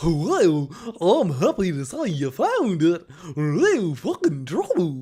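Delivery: loud, swooping dopey cartoon accent, laid on thick. Praising someone's accent switch, the speaker quotes it back: Goofy-like accent. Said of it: "that accent almost made it sound like Goofy".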